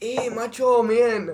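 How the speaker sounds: fake Mexican-style voice. Joking about going down there tanned to pass, posing as a Mexican. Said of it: "go down there and be like".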